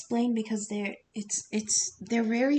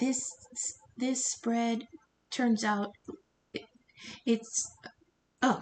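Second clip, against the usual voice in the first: stuttering, stammering, stumbling over words. A tarot reader introducing a spread for air signs, stuttering. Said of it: "excuse me for stuttering".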